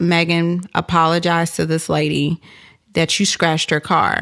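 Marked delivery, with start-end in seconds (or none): none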